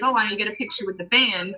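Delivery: plain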